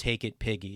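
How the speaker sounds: hushed, quiet half-whisper. Retelling what the priest said when giving the host: imitating a quiet half-whisper. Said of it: "he would quietly whisper".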